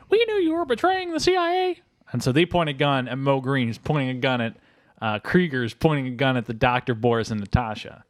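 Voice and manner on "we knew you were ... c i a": very high-pitched cartoonish voice. Acting out the secret agents as they show up, use a high-pitched Rocky and Bullwinkle voice. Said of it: "they have like high pitched voices now".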